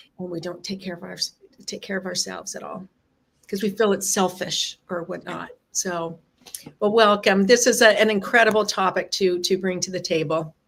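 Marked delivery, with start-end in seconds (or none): 0.2-5.5 teary, choked-up voice breaking, halting, fast. Host opening a conversation with a guest, tearing up. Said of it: "I am tearing up".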